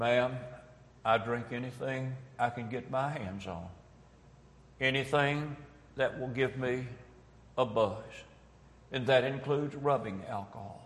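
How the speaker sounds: put-on soft, sheepish, bashful, embarrassed voice. Speaker retells her sister answering a woman's question, imitating a sheepish answer. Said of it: "she said very sheepishly".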